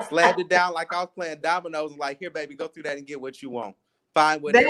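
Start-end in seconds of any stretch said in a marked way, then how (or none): 2.2-4.7 put-on, acted sarcastic tone of voice. Retelling slamming something down and telling someone to look through it, retelling a sarcastic remark. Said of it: "being a Virgo and sarcastic".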